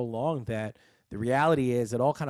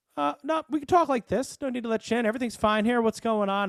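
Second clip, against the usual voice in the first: put-on smug, cocky, drunken voice, very high-pitched; 11 semitones higher, 4 dB louder than usual. Retelling talking to police through a bay window: imitating his cocky drunk self. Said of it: "I'm being a cocky, drunk son of a bitch asshole".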